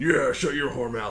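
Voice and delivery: bellowing war-god voice. Retelling what someone said right after a joke, in a Kratos voice. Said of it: "in his Kratos voice".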